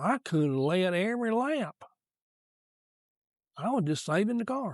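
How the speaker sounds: Southern Georgia drawl. Retelling what Bill Elliott said after the lost championship: Bill Elliott's Southern Georgia drawl. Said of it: "in that Southern Georgia drawl he's got".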